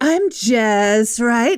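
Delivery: breathy put-on voice. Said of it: "I would go on the air and be like".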